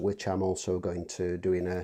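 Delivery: ordinary talk, nothing marked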